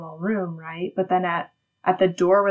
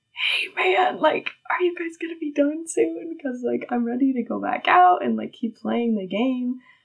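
casual, high-pitched stage whisper; 6 semitones higher than usual. Retelling sneaking up behind someone at dinner: imitating own whisper.

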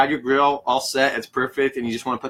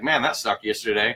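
plain

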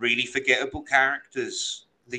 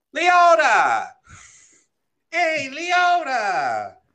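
put-on New York Italian accent, higher and louder; 4 dB louder than usual. Trying out a name's pronunciation after suggesting it: new york italian american accent. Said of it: "a New York Italian American accent".

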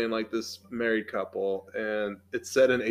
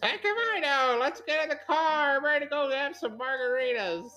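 put-on very high drunk grandma voice. A storyteller voices a grandma's reply, put-on drunk voice. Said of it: "That also sounds like my drunk voice".

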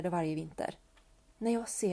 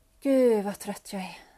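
worn-out, exhausted, weary exclamation, raised voice; 7 dB louder than usual. A woman staggers into the kitchen with bags, just home: tired. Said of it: "sa hon när hon stapplade in i köket".

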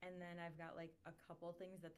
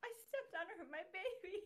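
frantic, very high, shrill, loud hysterical outburst; 14 semitones higher, 8 dB louder than usual. Retelling the same character's reaction, imitating someone hysterical. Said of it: "so hysterical".

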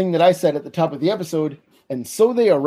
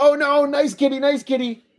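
put-on character yell, much higher; 9 semitones higher than usual. Retelling the scene where the cat chases Rizzo, Rizzo yelling. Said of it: "he starts yelling, like".

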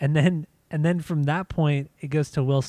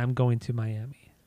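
extremely flat monotone, quieter and slower; 4 semitones lower, 3 dB quieter than usual. Imitate how he says his line after her English and Spanish welcome, extremely monotone. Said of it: "in the most monotone fucking way saying".

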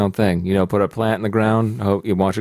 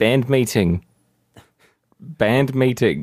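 put-on spoken in a New Zealand accent; 3 semitones higher than usual. Speaker does a two-word Rhys Darby impression. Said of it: "It's a two-word impression".

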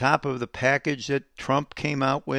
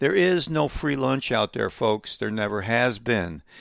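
ordinary talk

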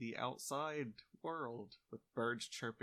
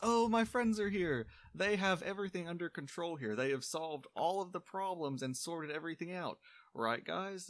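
loud, high-pitched voice in extreme panic; 7 semitones higher, 5 dB louder than usual. The elf Zhaonik sees the two arrivals and runs to them, extremely panicked. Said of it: "And a very familiar elf is up there with his back turned to you. / And a very familiar elf is up there with his back turned to you. / You can tell he's extremely panicked by everything going on".

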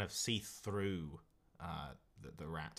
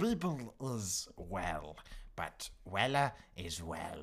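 shrill rat creature voice; 4 dB louder than usual. A cosmic rat named Beeble answers its visitors in a shrill voice. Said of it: "this shrill voice echoes out at you".

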